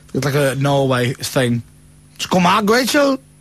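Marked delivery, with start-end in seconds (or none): 2.1-3.1 Welsh accent, much higher pitch. On a show, a host reads out a misprinted word to co-host rachel, welsh accent. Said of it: "And you sound Welsh when you say it".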